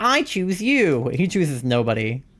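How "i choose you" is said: high, raised cartoon-hero voice, loudly called out. Contrasting a character with another: Ash Ketchum impression. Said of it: "he's not Ash Ketchum with the".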